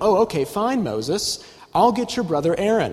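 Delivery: sarcastic reading, high pitch. Showing how he reads a passage about Moses, sarcastic tone. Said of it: "I read it in a sarcastic way".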